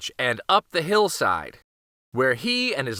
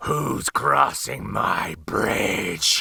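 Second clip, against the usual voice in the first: very deep, low, rough, creaky troll growl; 7 semitones lower than usual. Reading the billy goat tale, voicing the troll beneath the bridge: growling troll voice. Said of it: "growled the voice of an ugly troll".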